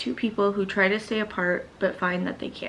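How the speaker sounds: ordinary talk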